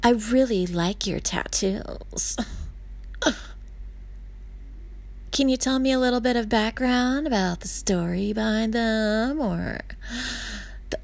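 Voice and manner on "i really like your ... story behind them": suggestive, winking, flirty delivery. Retelling what a man said to the speaker, imitating a winky tone. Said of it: "in a winky tone he said".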